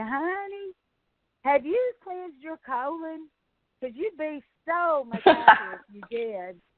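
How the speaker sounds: put-on Georgia southern accent. Retelling a man from georgia addressing a grouchy woman in a restaurant: georgia peach accent. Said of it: "Georgia peach accent".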